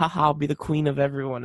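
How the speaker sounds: usual speaking voice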